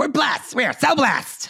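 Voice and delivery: very high-pitched voice, every word drawn out. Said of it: "we're doing this in their voices".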